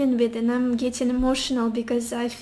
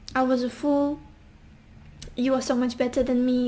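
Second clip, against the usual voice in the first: plain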